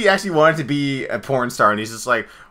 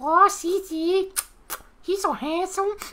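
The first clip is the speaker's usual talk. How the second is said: very high-pitched puppet voice; 5 dB quieter than usual. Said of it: "Miss [name], would you like to give [name] a kiss?".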